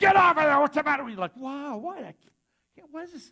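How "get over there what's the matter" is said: mock drill-sergeant yelling, much louder, higher. Retelling a story about a cranky sergeant, imitating the sergeant yelling. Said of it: "He's like yelling at us about everything".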